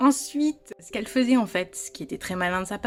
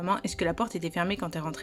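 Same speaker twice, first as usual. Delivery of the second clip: ordinary talk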